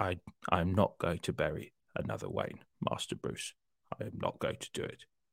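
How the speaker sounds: put-on very deep, hushed, barely voiced older voice. Showing how Michael Caine's voice aged: very deep older Michael Caine voice. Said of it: "his voice started getting very deep".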